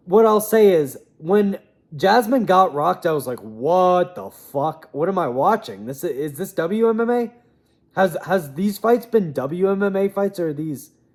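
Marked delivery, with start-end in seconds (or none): none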